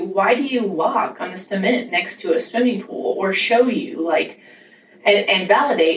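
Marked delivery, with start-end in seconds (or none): none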